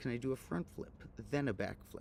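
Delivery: normal talking voice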